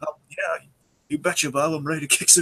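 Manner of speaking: friendly, pumped-up tone. Quoting how a character says a line the speaker loves: imitating friendly but amped-up voice. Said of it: "still sounds so friendly, but he sounds so amped up at the same time".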